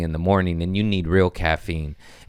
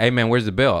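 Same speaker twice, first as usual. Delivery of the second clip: put-on curt, rude, on-edge, frantic demanding tone; 4 semitones higher than usual. Retelling rudely asking a server for the bill: retelling own rude frantic demand. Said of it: "I was rude".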